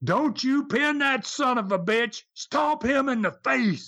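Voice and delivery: acted, high, screaming delivery. Retelling what he screamed at Dale at ringside, imitating someone screaming. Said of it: "he screams at Dale".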